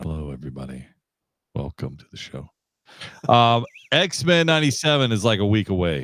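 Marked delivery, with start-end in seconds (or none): 0.0-2.5 deliberately lowered, very quiet, hushed put-on voice. Told to bring the voice down, the speaker opens the show: put-on lowered voice. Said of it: "Bring the voice down".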